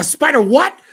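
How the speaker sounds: very high, loud, angry and sharp voice. Retelling what the dude said when he was so mad: imitating an angry man. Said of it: "And the dude's so mad".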